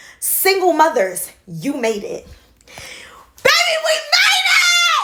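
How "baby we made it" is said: very high, drawn-out, excited scream. Speaker calls out to single mothers: screaming. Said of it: "I just said I'm gonna stop screaming".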